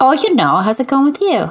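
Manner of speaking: playful, high-pitched put-on Minnesota accent. Podcast co-hosts greeting each other at the show's open, mock Minnesota accent. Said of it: "that's our accent".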